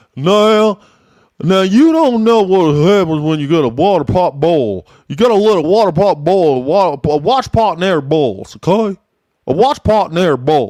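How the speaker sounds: put-on Virginian accent on every word. Contrasting Texans with how Virginians talk: imitating a Virginian accent. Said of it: "But Virginians are always like".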